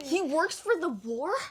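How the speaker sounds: put-on confrontational, slow, high-pitched, aggressive tone. Retelling what a child asked a teacher, imitating an aggressive question. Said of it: "she said it so aggressively".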